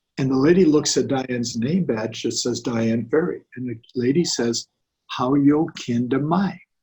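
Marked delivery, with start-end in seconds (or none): 5.1-6.6 very slow, drawn-out, sing-song Southern drawl. Retelling a lady at registration reading a name badge and asking a question, Southern drawl. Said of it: "that beautiful Southern drawl".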